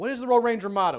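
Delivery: very loud, high-pitched yell. Recalling Royal Rangers, the speaker acts out someone calling for the motto, retelling a yell. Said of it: "somebody would always yell out".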